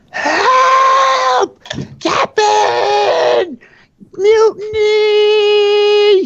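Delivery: high, loud, panicked screaming.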